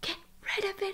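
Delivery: hushed, very quiet, barely audible whisper. Retelling a whispered aside to Frankie beside the speaker's mom, retelling a whisper. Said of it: "I whispered".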